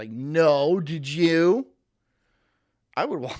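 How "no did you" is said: snide, dismissive, sneering tone. Acting out an imagined wife answering her husband: imitating a sneering wife. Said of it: "she fucking sneers at you".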